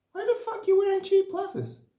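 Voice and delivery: woman's voice, pitched very high. Quoting their grandfather's remark about cheap glasses, imitating in a woman's voice. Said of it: "I did a women's voice".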